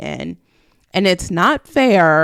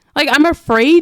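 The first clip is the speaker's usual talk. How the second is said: ordinary talk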